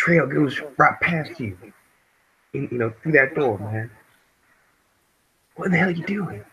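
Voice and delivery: hissing whisper. A player speaks in character at the door, in a hissing whisper. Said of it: "in a in a hissing whisper".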